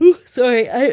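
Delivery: high, yawn-stretched talking through a yawn. Host talking with a guest about a bar, yawning. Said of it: "I don't know why I'm yawning".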